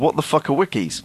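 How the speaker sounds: ordinary delivery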